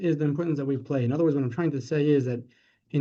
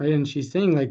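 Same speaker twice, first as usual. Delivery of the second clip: ordinary delivery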